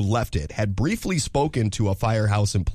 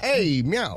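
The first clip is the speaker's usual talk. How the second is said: put-on Jersey accent, pitched up, meowed; 8 semitones higher than usual. Joking that a cat meowed with a Jersey accent; Jersey-accent meow. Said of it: "It meowed with a Jersey accent".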